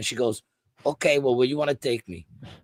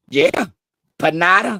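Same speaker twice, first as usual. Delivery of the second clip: put-on Spanish accent, very loud, pitched up; 7 semitones higher, 9 dB louder than usual. Retelling a woman's answer in a confusing exchange over directions, in a put-on Spanish accent. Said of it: "because they got accents".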